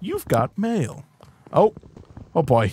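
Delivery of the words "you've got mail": soft, canned automated announcer voice. Telling chat that mail has arrived, in the AOL 'You've got mail' voice. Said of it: "You've got mail in an A O L voice".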